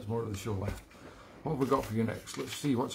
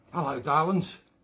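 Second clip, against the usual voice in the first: put-on loud voice, accent slipping into Australian; 3 semitones higher, 5 dB louder than usual. Attempting a character's intro that slips: Sid Snot voice gone Australian. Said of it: "Oh, it's gone Australian again".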